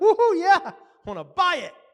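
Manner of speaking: real excited whoop, very loud and very high. Recalling buying a first motorcycle, the speaker acts out the reply: retelling being real excited. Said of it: "I got real excited".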